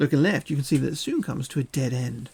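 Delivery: ordinary delivery, nothing marked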